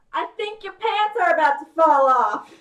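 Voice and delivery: shouting loudly. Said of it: "And I will just shout".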